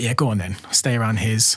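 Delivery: ordinary talk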